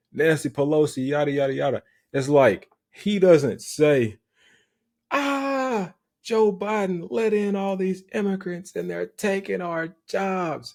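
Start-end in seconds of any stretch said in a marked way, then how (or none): 5.1-10.8 high, whiny, helpless-victim voice. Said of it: "He not saying it like a victim".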